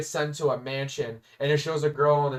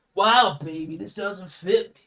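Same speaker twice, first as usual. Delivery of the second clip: all-groovy, cool-cat talk, pitched up; 5 semitones higher, 4 dB louder than usual. Describing a game character who talks all groovy: groovy Austin Powers-style talk. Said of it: "That's how he talks".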